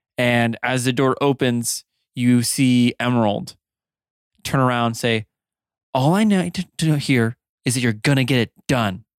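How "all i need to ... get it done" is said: very angry woman's voice. Narrating a scene as the door opens and Emerald turns to speak: Emerald, very angry. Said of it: "You can hear a woman's voice, very angry".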